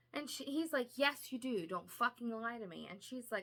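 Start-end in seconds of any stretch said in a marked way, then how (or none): 1.0-2.9 put-on angry man voice, slower. Retelling a man's demand for a missing horn: mock-angry. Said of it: "he's very fucking angry".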